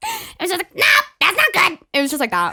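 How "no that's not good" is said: put-on pirate parrot voice, higher, louder. Asked to show the first voiceover character: pirate parrot voice. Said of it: "Can you do the voice?".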